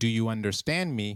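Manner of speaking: usual speaking voice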